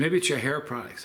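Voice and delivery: ordinary talk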